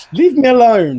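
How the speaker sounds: high, loud voice, cracking mid-line. Stressed after mislaying something while setting up a stream, voice cracking. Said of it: "With the voice break".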